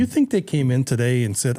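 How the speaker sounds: ordinary talk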